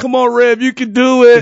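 shrill, booming, high and loud upbeat voice. Retelling a running partner's cheering during a hard run: imitating upbeat encouragement. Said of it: "and he's so positive".

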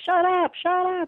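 very high, slow, drawn-out screamed outburst. Retelling what another resident yelled in a care home: imitating someone screaming. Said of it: "somebody else is screaming".

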